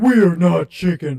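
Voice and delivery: very loud cartoon sidekick voice at full blast. Showing off impressions into the microphone, in a Patrick Star voice. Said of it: "I like to do Patrick Star".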